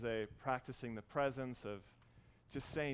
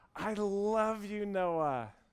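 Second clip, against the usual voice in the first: loud, very slow, drawn-out yell; 8 semitones higher, 7 dB louder than usual. Retelling calling back across a crowded pool: retelling own yell. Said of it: "I yelled out".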